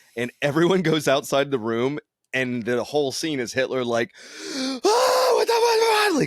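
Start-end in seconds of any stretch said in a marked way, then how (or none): 4.5-6.2 put-on enraged, very high, dragged-out scream. Retelling a film scene where everyone leaves the room: imitating Hitler screaming angrily. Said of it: "screaming, crying, like, angry".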